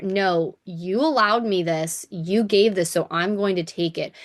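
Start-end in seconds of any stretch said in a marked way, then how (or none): none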